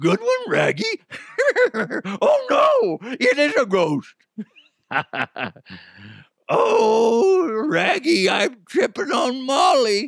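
very high, very slow, swooping, dopey cartoon dog voice. Joking about a ghost, the speaker does a Scooby-Doo voice. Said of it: "the Scooby voice".

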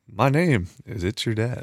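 polished radio-announcer voice. Showing off a radio voice improved over years, in Michael Barbaro radio voice. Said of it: "I feel like I've gotten a significantly better radio voice over the years of doing this. I feel like I know how to".

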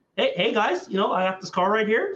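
used car salesman sales-pitch voice. Showing others how Jaren Allen talks, do Jaren Allen as a used car salesman. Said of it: "He talks like a 40-year-old used car salesman".

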